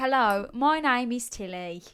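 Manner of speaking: put-on Australian accent. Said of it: "You sound depressed".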